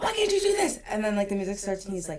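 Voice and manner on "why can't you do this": very high, shrill, acted-out yelling. Describing a man who yells before the music starts, imitating someone yelling. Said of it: "he'll like yell at you".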